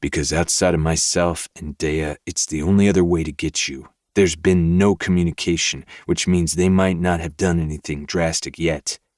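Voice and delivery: ordinary delivery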